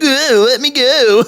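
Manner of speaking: very high, very slow, stretched cartoonish whimper. Retelling a scene where Titus is grabbed by the hair: imitating Titus's Sonic voice. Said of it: "Titus in his sonic voice is like".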